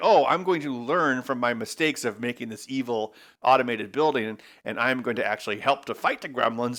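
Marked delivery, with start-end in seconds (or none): none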